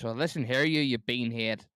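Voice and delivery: Belfast Northern Irish accent. Speaker showing the only Irish accent he can do, Belfast Northern Irish accent. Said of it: "That's like me Belfast".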